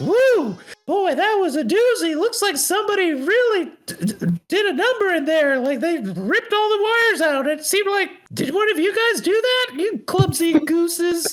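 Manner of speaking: very high, squeaky character voice. Voicing the gingerbread man who pops out after the lights return: voicing the gingerbread man. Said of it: "the gingerbread man pops out and goes".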